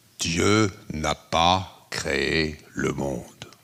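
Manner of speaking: put-on big bass voice. Quoting a Jesuit priest's startling line: Père Varillon's big bass voice. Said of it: "il disait de sa grosse voix de basse".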